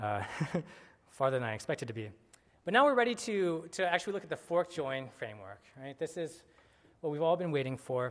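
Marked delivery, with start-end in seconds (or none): 1.1-2.1 fast, hurried, rushed talk. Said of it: "I guess I'm talking kind of fast".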